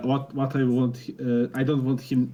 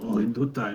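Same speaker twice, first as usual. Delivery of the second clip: hushed whisper; 3 semitones lower, 3 dB quieter than usual. Repeating a line a second time, in a whisper. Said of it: "I I also whisper".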